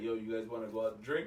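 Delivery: put-on deep voice imitating another speaker. Retelling a phone call from Steve: imitating Steve's deep voice. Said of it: "with his deep-ass voice".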